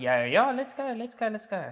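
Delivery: sarcastic fake enthusiasm. Playing along with him on body cam audio, with sarcastic fake enthusiasm. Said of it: "you can hear I'm sarcastic".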